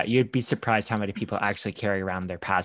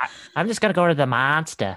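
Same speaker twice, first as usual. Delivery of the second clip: high-pitched put-on Boston accent on every word; 6 semitones higher than usual. Riffing on The Departed in conversation: Boston accent. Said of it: "Right my Boston accent".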